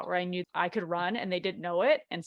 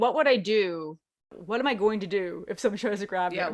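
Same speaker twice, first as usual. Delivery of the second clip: ordinary talk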